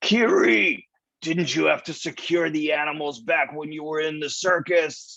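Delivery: shouted call. Playing a character on a ship, shouting a question to a companion: shouting to kiri. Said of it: "he shouts".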